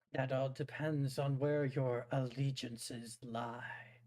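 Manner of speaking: slow, hissing, serpentine dragon creature voice. Voicing a dragon asked whether it is friend or foe, hissing dragon voice. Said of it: "The fiery dragon lowers its head, hissing at halt as it addresses you. My knights in order have fallen from glory. Join the ranks. Show them the light they have lost, and rekindle the flame in those w".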